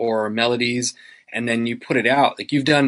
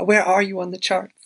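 put-on very high, sing-song little old lady voice; 13 semitones higher, 4 dB louder than usual. Retelling what a sweet lady who always checks in asked, little old lady accent. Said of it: "this is my little old lady accent".

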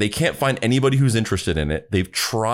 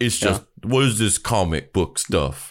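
ordinary, plain regular-guy voice. Imitating the other speaker imitating an average Joe: imitating the other speaker imitating an average Joe. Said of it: "That's a really good impersonation of me doing an impersonation".

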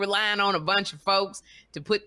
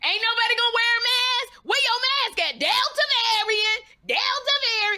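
put-on very high, crazed, frenzied shrieking. Retelling how a woman screamed at a maskless party; retelling frenzied screaming. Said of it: "she starts screaming".

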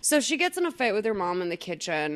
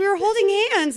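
high, laughing mock voice, protesting tone. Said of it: "he's like".

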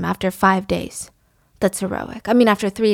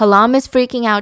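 usual speaking voice

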